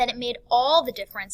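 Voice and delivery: heavy, loud stress on "all". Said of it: "the key word here is all".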